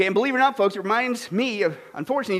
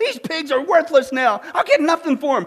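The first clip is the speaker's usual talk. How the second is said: put-on man's yelling voice; 5 semitones higher, 3 dB louder than usual. Storyteller acts out a man who finds his pigs ruined; retelling a yell. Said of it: "and he yells".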